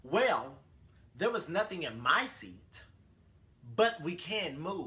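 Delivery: mock, loud, curt, snippy, full of attitude. Retelling what a woman said about the seats, imitating a woman's attitude. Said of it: "with an attitude from the jump".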